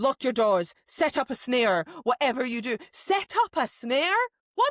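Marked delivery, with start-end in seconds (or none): 0.0-2.8 mock snarl, higher. Retelling what a character in the story says: imitating a snarl. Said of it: "He snarls and he's like".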